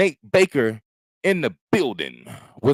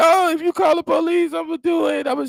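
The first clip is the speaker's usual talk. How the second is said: mock sobbing, pitched very high. Retelling a man with a knife threatening his girlfriend: imitating someone crying. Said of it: "he's crying like".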